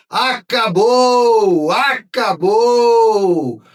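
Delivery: ecstatic joyful shout, very high and very loud. Imitating a tv narrator's title call: imitating a narrator's joyful shout. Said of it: "a explosão de alegria foi tão grande que ele gritou".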